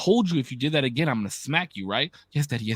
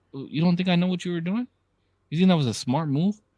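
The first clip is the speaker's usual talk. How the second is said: steady, calm, stern parent voice, pitched up; 5 semitones higher than usual. Acting out a parent confronting a kid who messed up: imitating a calm stern parent. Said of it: "my calm voice, like my calm stern".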